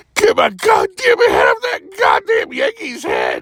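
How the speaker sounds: put-on high, shrill, swooping toddler-like tantrum screech. Retelling how a man screamed at the speaker, imitating a toddler screaming. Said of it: "he just screams at me like, like a toddler going".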